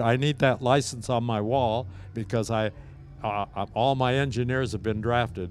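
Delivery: ordinary delivery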